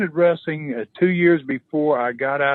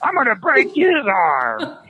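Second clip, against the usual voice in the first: mock scream, higher pitch; 8 semitones higher, 3 dB louder than usual. Retelling a wrestler taunting the grandmothers, imitating him screaming. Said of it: "he screams".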